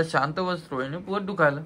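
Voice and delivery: ordinary talk, nothing marked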